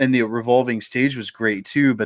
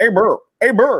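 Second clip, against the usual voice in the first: put-on muffled mouth-full voice, much higher pitched; 10 semitones higher, 4 dB louder than usual. Retelling a man on the phone answering a trivia question, imitating talking with mouth full. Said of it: "he's got his mouth full of cookies".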